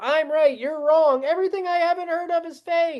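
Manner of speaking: high, mocking know-it-all voice. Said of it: "The interview was two hours of".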